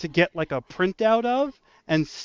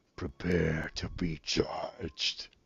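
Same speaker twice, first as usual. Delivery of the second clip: eerie creature voice, hushed, slow and drawn-out; 12 dB quieter than usual. Voicing a judging creature in the corner: creepy creature voice. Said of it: "I'm sure he has a creepy voice".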